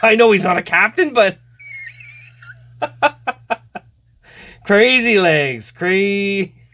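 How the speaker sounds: laughing while talking. Naming cards while opening a box set, laughing while talking. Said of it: "I'm just gonna laugh so much".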